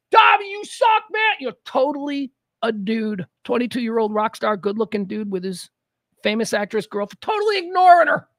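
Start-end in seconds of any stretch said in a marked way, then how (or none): 0.1-1.3 mock rowdy jeering yell, high and loud. Retelling a drummer yelling at roadies: imitating a drummer shouting. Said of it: "He's shouting at roadies".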